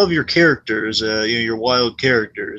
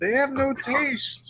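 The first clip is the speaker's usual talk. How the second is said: put-on sincere puppet voice, higher and quieter; 14 semitones higher, 6 dB quieter than usual. Quoting a line to praise its sincerity: imitating Gonzo's sincere delivery. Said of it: "Gonzo just delivers this perfectly".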